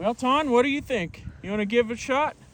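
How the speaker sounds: loud, high-pitched calling out.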